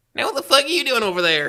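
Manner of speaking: put-on very high, shrill, rattled-off hillbilly kid voice. Imitating a twenty-one-year-old friend who talks like a hick child. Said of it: "he talks like a hick child".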